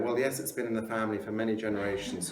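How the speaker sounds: plain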